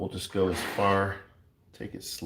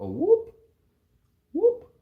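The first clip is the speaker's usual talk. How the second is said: very high, loud rising whoop sound effect. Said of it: "It's more whoop".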